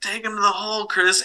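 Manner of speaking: put-on yelling, high and as loud as possible. Retelling shouting advice at a basketball player during a game, retelling a loud yell. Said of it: "I just yelled as loud as I could".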